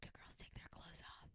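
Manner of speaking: barely voiced, under-the-breath muttered whisper. Describing a supposed hidden line in a Disney movie, Aladdin muttering under breath. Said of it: "he says something under his breath".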